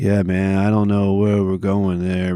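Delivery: dragging, flat, monotone drone. Showing how dudes between seventeen and thirty-two talk, in a draggy monotone. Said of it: "they have that weird that weird draggy monotone".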